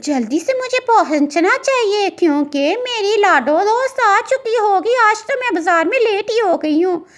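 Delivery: sweet, high, hurried cartoon bird voice. In a cartoon, a bird carrying fruit hurries to meet her friend, little bird character voice. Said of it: "एक बहुत ही प्यारे जंगल में एक खूबसूरत चिड़िया रहा करती थी जिसका नाम [name] था। / एक बहुत ही प्यारे जंगल में एक खूबसूरत चिड़िया रहा करती थी जिसका नाम [name] था। / एक बहुत ही प्यारे जंगल में एक खूबसूरत".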